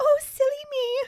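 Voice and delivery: put-on very high, sickly-sweet, simpering girlish voice. Describing a woman who simpers everything she says, doing her mock-simpering voice. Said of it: "she just like simpers everything that she says".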